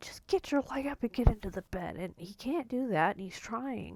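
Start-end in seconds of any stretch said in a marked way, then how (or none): 0.0-2.0 put-on high, pained yell. Retelling how mom yelled at dad to get into bed: imitating mom yelling. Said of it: "she's yelling at my dad".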